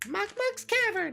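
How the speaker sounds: squeaky put-on voice. Telling the story, the speaker does Lolala's line in a squeaky Lolala voice. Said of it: "That's my Lolala impression. ... my nice squeaky voice".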